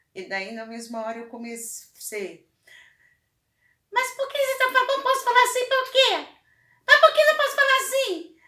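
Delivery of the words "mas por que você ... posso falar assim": high little mouse voice, much higher, louder, faster. Retelling answering her complaint in the same voice, high little mouse voice. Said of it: "comecei a fazer uma voz de ratinho... bem agudinha".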